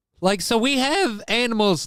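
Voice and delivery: very high voice cracking partway through. Speaker talking about invasive species, voice cracking. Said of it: "My voice crack won't stop".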